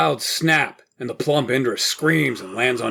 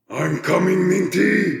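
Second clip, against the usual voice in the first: high, resounding, booming voice; 7 semitones higher than usual. Narrated scene: a charging armored character calls out; booming voice. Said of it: "His voice booms from the armor".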